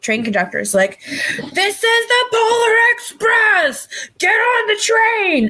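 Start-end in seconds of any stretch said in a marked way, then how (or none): 1.0-5.5 very high, very slow, drawn-out yell. Imitating the train conductor from the movie: imitating the conductor yelling. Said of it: "just yelling".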